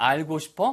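ordinary talk

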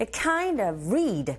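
KIND and REED stressed, "a" and "of" reduced.

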